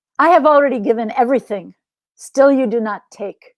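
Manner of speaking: plain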